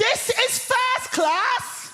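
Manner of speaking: put-on, very high, full-throated, drawn-out shouting. Retelling a woman in a first-class carriage shouting at them, retelling a loud shout. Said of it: "at the top of her voice, she shouts".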